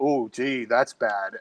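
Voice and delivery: put-on sarcasm, very drawn out and slow. Imitating Donald Trump answering at a press conference: imitating Donald Trump's sarcasm. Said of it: "you could hear the sarcasm in his voice".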